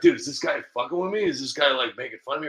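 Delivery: plain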